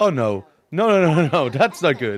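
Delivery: mock scared, sinking, slow and dismayed. Retelling a reaction to a voice being turned on: retelling own scared reaction. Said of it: "because I was scared".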